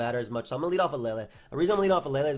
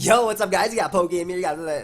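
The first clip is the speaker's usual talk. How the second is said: put-on, loud, forced, pumped-up, wide-awake energy; 4 semitones higher, 6 dB louder than usual. Just woke up, showing how they sound when long awake: forced wide-awake voice. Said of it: "that was really forced".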